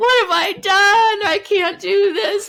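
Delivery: very high, loud, drawn-out tearful wailing sob. Retelling sobbing on the phone under a desk: imitating own past sobbing. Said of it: "sobbing on the phone with him".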